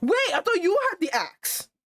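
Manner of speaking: animated, excited, high-pitched outburst. Reacting to the narrator's scene, yelling. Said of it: "I don't know why I'm yelling".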